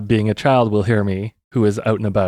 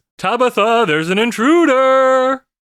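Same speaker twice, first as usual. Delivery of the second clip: shrill, high, drawn-out, top-of-lungs yell; 13 semitones higher than usual. Playing a character warning tabitha of an intruder: yelling at the top of lungs. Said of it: "yell at the top of my lungs".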